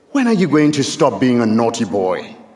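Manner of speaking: mock earnest little boy voice, mildly scolding and serious. Retelling a boy's question at the meeting house: imitating a scolding voice. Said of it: "almost in a scolding voice".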